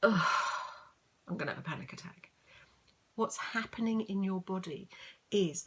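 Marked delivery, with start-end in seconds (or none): 0.0-2.3 sighing, breathing out before the words. Showing a calmer way to say the same words: sighing, breathing out first. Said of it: "say it in a slightly different way".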